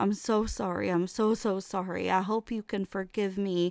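put-on sobbing, crying voice. Daughter recalling her dad losing it and apologizing, imitating dad crying. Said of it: "And my dad is losing it".

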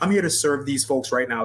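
ordinary talk, nothing marked

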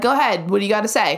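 put-on passive-aggressive tone. Retelling the speaker's own reply to someone who got mad, mock passive-aggressive. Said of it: "like so passive aggressive".

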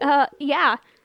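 flustered, nervous, panicked delivery. Retelling a movie scene where a character answers: imitating a nervous, panicked reply. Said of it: "she gets real nervous, and she panics".

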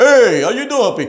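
mock booming game show host. Imitating his loud doctor greeting him, booming game show host voice. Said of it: "He sounded like a fucking game show host with a booming voice".

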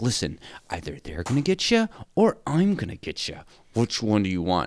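scary, taunting, menacing voice, low and swooping. Retelling a film scene where Jim threatens her: imitating Jim playing it scary. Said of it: "he's playing it pretty scary".

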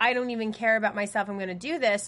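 ordinary delivery

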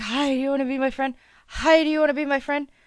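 high, rushed, eager, friendly happy dog voice. Describing how they greet people: imitating an eager happy dog. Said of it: "like a happy dog".

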